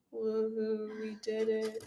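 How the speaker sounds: monotone fake excitement. Asked how monotone excitement would sound, doing monotone fake excitement. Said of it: "what would your monotone excited that this thing died sound like".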